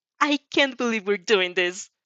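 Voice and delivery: ordinary talk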